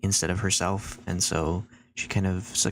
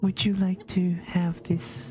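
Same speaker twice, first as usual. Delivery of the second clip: very high, slow, little voice; 11 semitones higher than usual. Speaker tries to recall how Nellie sounds and voices her line, soft high-pitched Nellie voice. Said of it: "Very soft and up, high-pitched".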